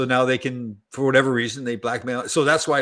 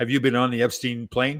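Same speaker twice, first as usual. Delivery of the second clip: ordinary talk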